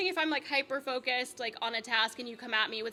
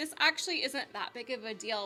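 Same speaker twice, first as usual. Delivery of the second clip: ordinary talk, nothing marked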